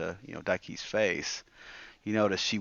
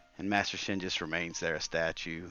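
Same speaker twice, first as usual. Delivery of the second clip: ordinary talk, nothing marked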